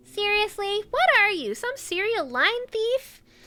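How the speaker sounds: very high, squeaky character voice. Voicing two characters alone, speaker replies as Paimon, in Paimon voice. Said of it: "Paimon voice".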